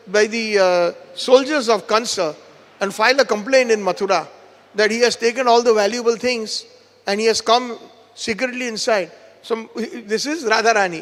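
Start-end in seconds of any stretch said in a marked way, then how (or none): none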